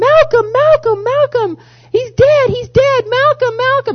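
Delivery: very high, very loud, piercing scream. Retelling how a woman in the audience jumped up: imitating a woman screaming. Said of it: "jumps up and screams".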